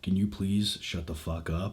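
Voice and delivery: grave, very deep, very low, very quiet somber voice. Retelling telling off annoying girls at the movie theater, in a deep somber voice. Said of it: "I talked in like a really deep somber voice".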